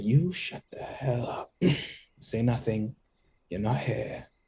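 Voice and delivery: hushed, whispered voice. While dragging a companion along in the game, the speaker whispers to him. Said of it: "I'm whispering to him".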